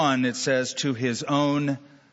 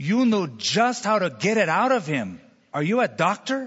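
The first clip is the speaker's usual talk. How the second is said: put-on non-native, broken English accent; 4 semitones higher than usual. Retelling a story, voicing a grateful woman asking a man a question, broken english accent. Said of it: "in her broken English accent".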